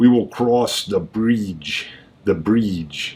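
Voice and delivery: low, deliberate Russian accent. An actor rehearsing for a show practices a Russian accent. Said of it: "working on my Russian accent".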